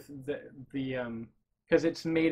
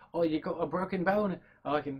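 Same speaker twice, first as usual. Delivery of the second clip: deliberately botched, horrible fake Cockney accent. Retelling Lockhart going after Harry, the speaker voices him: bad Lockhart impression, Cockney.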